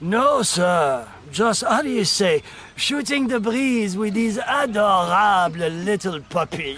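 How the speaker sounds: mock French accent, poorly done. Mocking evil french cartoon characters, doing a horrible french accent. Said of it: "it's a horrible French accent".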